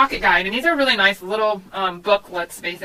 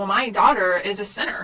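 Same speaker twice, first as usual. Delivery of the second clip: ordinary talk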